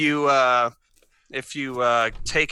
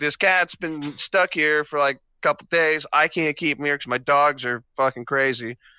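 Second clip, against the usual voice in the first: usual speaking voice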